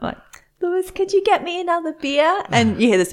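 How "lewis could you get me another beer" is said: very quiet, barely voiced, high little voice. Retelling asking someone over the intercom for a beer: imitating saying it really quietly. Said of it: "I was saying it really quietly".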